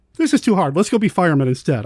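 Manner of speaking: ordinary talk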